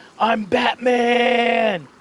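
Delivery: very high, loud, drawn-out yell. Retelling a player jumping off a shack: imitating someone yelling. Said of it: "the whole time was yelling".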